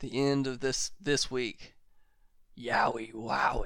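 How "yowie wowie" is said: spooky put-on voice, much quieter. A speaker recalls his personal markout moment of the week, scary voice. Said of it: "In the scary voice".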